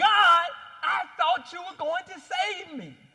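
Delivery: indignant, attitude-filled tone. Telling a dad joke, voicing a drowned man at heaven's gates, mock-angry with attitude. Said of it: "he's mad at God".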